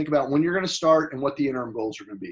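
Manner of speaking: fast, rattled-off delivery.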